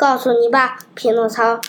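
ordinary delivery, nothing marked

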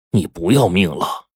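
plain reading voice

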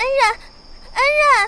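anxious, worried, urgent calling, very high. A narrator reads someone holding up a stumbling man, speaking anxiously. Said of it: "阿许焦急地说".

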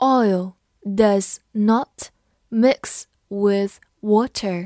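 very slow, drawn-out read-along.

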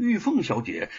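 plain

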